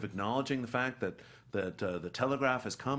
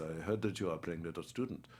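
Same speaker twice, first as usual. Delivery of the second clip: put-on German accent, lower and quieter; 6 semitones lower, 5 dB quieter than usual. Retelling Anthony Hopkins coming over to greet them, Anthony Hopkins in German accent. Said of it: "he has this German accent".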